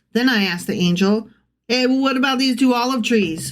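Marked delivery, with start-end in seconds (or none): 1.7-3.6 silly put-on New York, Boston accent. Retelling a scripture line for laughs in a silly boston new york accent. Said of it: "Boston, New York, silly accent".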